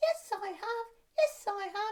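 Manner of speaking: high, little squeaking puppet voice. Demonstrating a call-and-response voice exercise, answering in a squeaky voice. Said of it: "Have you bought your squeaky voice?".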